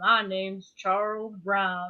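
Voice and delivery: put-on slow, sage, elderly-sounding wise man's voice. Retelling a spirit's voice on a recording, imitating an older, wise-sounding man. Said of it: "that's the best impression I can do".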